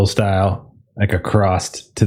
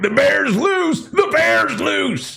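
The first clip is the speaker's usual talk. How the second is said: frantic, ragged, very high panicked scream. A player acting out their character speeding into the car, screaming.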